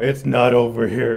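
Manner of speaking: put-on cranky old man voice. Mocking an aged-up movie hero's voice: imitating a get off my lawn voice. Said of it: "his get off my lawn voice".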